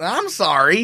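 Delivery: very sarcastic, dry, mock-sorry tone. Recalling what she said after being asked to play something else, retelling a sarcastic reply. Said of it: "but in this very sarcastic".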